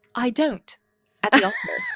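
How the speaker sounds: put-on posh British accent, very high. Imagining a wedding vow at the altar said in a posh British accent. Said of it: "imagine how much more posh it sounds".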